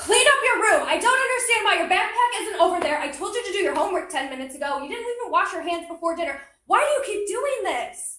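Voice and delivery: loud, high, angry scolding yell. Showing workshop participants a barrage of directions: angry parent yelling. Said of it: "Why are you yelling at me?".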